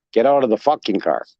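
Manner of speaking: mock-aggressive, violent-sounding, aggressive tone. Retelling what a police officer said to the speaker in the car, mock-aggressive order. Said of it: "Very violent, very aggressive".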